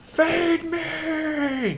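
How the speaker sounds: high-pitched adult voice, shrill screech way up high. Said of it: "adult voice, but just high-pitched".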